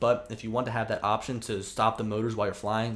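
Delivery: normal talking voice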